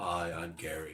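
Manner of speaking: very deep, very low, very soft, hushed voice. Joking about a beautiful woman who turns out to have a deep voice. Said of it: "she has a deep voice".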